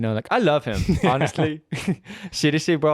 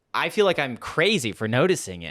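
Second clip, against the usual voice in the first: ordinary talk, nothing marked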